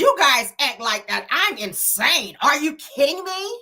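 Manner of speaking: put-on high, drawn-out valley-girl drawl. Quoting Alexis in her valley voice: Alexis valley-girl voice. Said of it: "Like in her valley voice".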